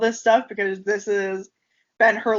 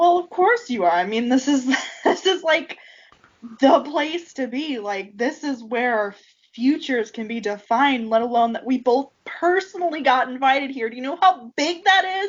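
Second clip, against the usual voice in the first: eager, bubbling enthusiasm with swooping pitch; 4 semitones higher than usual. A character shaking the listener's shoulder as she talks, enthusiastic yelling. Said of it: "she's like enthusiastically yelling about this".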